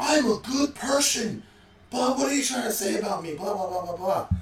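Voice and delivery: put-on shrill, very high, furious explosive yell. Retelling how a student yelled about a bathroom break: imitating someone yelling.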